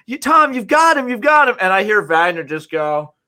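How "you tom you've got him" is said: mock yelling, much higher pitch. A reporter retelling what a man in a fighter's corner yelled during a match, retelling a coach's yell. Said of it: "was just yelling like".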